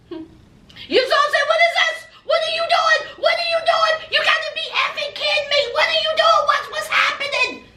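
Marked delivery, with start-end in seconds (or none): 1.4-7.5 put-on very high-pitched, frantic, losing-it outburst. Retelling how Yazan reacted to a hug: imitating someone flipping out. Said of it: "Yazan flipped the F out".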